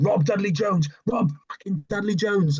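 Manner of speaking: acted-out, high-pitched screaming. Retelling his dad standing over him while benching: imitating his dad screaming. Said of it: "he was screaming".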